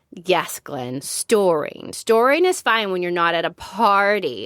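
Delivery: ordinary delivery, nothing marked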